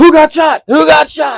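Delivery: very high, panicked, freaked-out tone. Retelling how the PL reacted to hearing someone got shot: imitating someone freaking out. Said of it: "And he freaked out".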